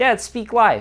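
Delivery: put-on high little kid voice. Retelling a son calling from the back seat: imitating Bodhi's high-pitched little voice. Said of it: "in his high pitch".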